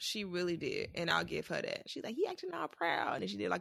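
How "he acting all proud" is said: very high, creaky, scratchy funny squeaky voice. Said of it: "the funny voice impression".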